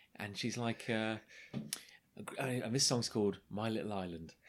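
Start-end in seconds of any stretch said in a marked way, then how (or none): none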